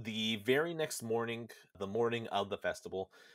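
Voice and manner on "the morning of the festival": ordinary talk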